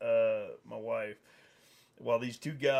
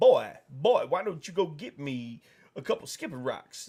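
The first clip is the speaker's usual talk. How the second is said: put-on cartoon rooster voice. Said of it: "I started acting like Foghorn Leghorn".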